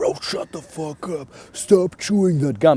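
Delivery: rude, obnoxious tone. Showing a very dickish way to ask a driver: acting rude and dickish. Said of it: "in a very dickish way".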